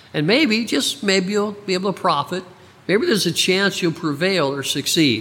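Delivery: high mocking tone.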